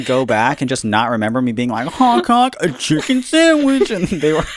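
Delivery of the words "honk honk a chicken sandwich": goofy put-on voice, very high and loud. Saying chicken sandwich after being asked for the funniest way: funny voice. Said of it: "in a funny voice".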